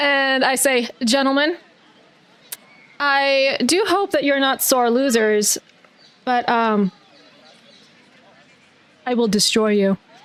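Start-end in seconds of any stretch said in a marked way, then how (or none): 1.0-10.0 mock-polite, courteous, genteel, respectful tone. Voicing a character challenging the boys at golf: mock-respectful challenge. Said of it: "In the most respectful way".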